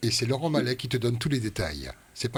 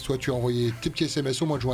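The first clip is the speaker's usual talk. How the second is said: plain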